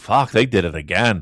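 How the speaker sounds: muttered under breath. A show host recalls reacting as the match ended: mumbled under breath. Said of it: "mumbled under my breath".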